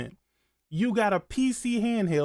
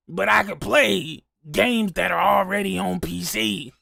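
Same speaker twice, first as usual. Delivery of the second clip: gravelly, creaking put-on voice; 4 dB louder than usual. Talking about playing PC games in a put-on voice: Doctor Dark voice. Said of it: "I'm gonna put on the Doctor Dark voice".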